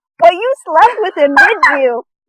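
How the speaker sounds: put-on thick Jamaican accent, pitched high. Imitating a TV psychic's ad: Miss Cleo fake Jamaican accent. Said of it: "intense fake Jamaican accent".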